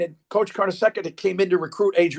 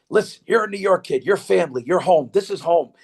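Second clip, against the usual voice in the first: deep, low voice, spoken close up. Retelling what a coach told a kid up close, imitating his low voice. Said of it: "he's got that low voice".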